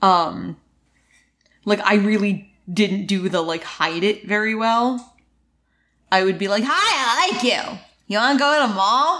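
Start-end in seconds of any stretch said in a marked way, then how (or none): 6.6-9.2 mock, comically forward, blunt and upfront manner. Retelling how they used to ask someone out: imitating own comically forward self. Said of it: "Did you do that voice?".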